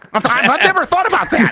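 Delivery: very high, squeezed-up cartoon duck voice. Impersonating a colleague on request, answering where cinnamon comes from: sounding like Daffy Duck. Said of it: "Why do you sound like Daffy Duck?".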